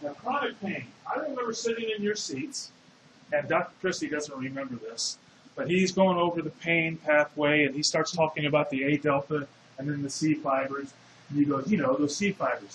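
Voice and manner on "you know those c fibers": put-on low German-accented lecturing voice. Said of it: "with a German accent".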